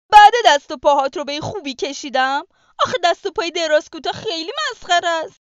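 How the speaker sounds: very loud, rushed, furious angry outburst. The rabbit complains about the wolf's drawing of him, and the wolf replies; angry. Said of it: "گرگ عصبانی شد و گفت".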